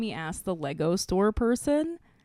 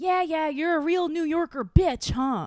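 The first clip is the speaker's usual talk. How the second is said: acted-out, high, screaming kid voice; 8 semitones higher than usual. Retelling how an eight-year-old son screamed at a beeping car, retelling a scream. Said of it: "Like he screamed that".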